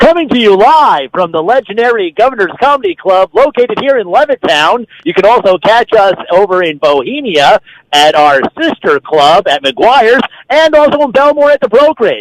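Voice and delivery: radio promo announcer voiceover voice. Announcing where the show comes from live: announcer voiceover voice. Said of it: "your voiceover work like that".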